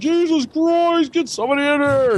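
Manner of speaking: shouting. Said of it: "fucking yelling down the fucking hallway".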